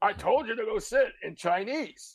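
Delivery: mock yelling in a high voice. Retelling someone who yelled at him in Chinese: imitating someone yelling. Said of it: "start yelling at me".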